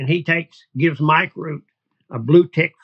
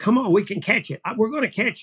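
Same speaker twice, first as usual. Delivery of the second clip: play-acted thrilled, high, excited calling voice; 5 semitones higher, 3 dB quieter than usual. Describing a woman running with her dogs, imitating an excited call. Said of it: "so much excitement in the voice".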